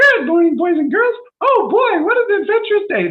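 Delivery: very high, loud cartoon mouse voice. Recalling morning wake-up calls while staying at Disneyland, doing a Mickey Mouse voice. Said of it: "it was Mickey Mouse".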